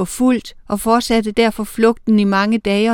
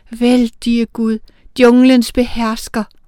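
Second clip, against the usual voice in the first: trembling, quavering, shaky voice; 2 semitones higher, 4 dB louder than usual. Narrator reading Matali's line in a story, trembling voice. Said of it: "med skælvende stemme".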